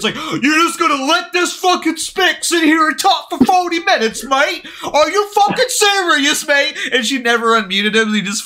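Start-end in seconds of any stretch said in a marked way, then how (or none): 0.1-6.8 high, fully worked-up, furious raging rant. Retelling a muted user's all-caps chat messages: imitating someone raging. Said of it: "just sitting there fucking raging".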